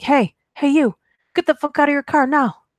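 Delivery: high, furious, angry screaming. Reading a story where a stranger runs up: imitating a man screaming. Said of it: "starts screaming at me, shouting stuff like".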